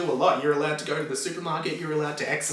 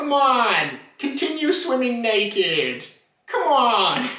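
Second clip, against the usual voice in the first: drawn out, high-pitched and swooping; 6 semitones higher, 4 dB louder than usual. Retelling a Simpsons episode, the speaker does a terrible Chief Wiggum impression. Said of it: "my Wiggum impersonation's terrible".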